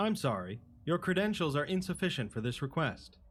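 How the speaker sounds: polite computer assistant voice. Voicing the AI Flanagan refusing a request: voicing an AI assistant. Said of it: "assisted by an A I known as Flanagan".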